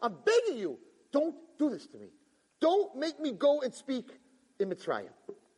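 acted earnest pleading, high, pitch rising and falling. Acting out Moses begging God not to send him to speak: begging. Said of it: "He's begging God".

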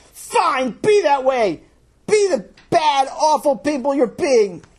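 furious, very high-pitched angry yell. Reading a story where the character yells at friends leaving: yelling angrily. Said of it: "he yells at them".

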